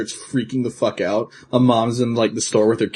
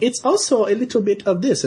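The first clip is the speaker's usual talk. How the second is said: put-on thick Japanese accent, woman's voice, pitched way up; 11 semitones higher than usual. Retelling a commercial's closing voiceover: imitating a heavily accented Japanese voice. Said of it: "very heavily accented, like, Japanese lady voice".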